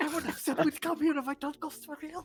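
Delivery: whispered voice. Whispering a worried line into another player's ear: whispering in character. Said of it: "I'm whispering into Kayla's ear".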